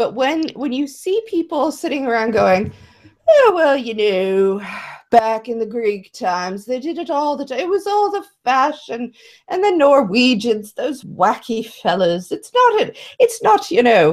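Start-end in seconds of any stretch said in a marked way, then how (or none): 3.3-12.3 bad, weird, put-on British accent. Mocking people who sit around making excuses, weird fake british accent. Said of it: "some kind of weird like attempt at a British accent".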